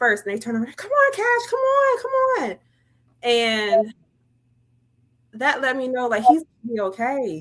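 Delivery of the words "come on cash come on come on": put-on very high, eager, excited child-like calling. Retelling how the kids turned around to call him: imitating excited kids calling. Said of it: "all excited to see him".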